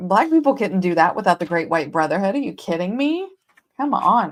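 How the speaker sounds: dripping sarcasm, facetious and tongue in cheek. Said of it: "I'm being sarcastic".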